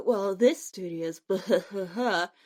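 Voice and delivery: slightly low, snooty highbrow mocking voice. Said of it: "act all snooty and highbrow and say".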